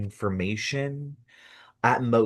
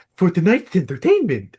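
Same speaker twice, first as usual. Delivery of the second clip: very loud, high, booming eccentric showman voice; 8 semitones higher, 8 dB louder than usual. Retelling a puppet show host's opening speech, Mad Hatter voice. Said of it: "He has a total Mad Hatter voice".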